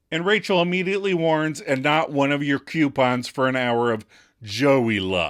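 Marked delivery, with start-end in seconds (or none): none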